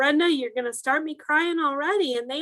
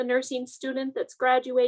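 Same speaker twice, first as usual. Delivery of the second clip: ordinary delivery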